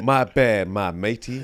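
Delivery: put-on Australian accent. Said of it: "random Australian accents".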